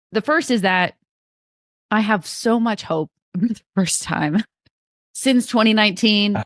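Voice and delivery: teary voice, close to crying. Previewing the United States team's chances, on the verge of tears. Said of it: "You sound like you're gonna cry".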